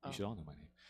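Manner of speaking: menacing, deep, hushed, very low ominous murmur. Greeting the audience, then telling them they should know his name: ominous sounding. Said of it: "That was ominous sounding".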